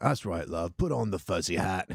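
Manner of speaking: put-on older British man's accent, calling out. Imitating an old british guy talking about fuzzy hats: put-on old british guy voice. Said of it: "old British [name] kinda guy over there who's like".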